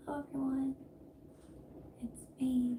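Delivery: smallest little whispered, mousy voice. Recalling the start of her first YouTube video, in a tiny mouse-like voice. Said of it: "I literally sounded like a mouse".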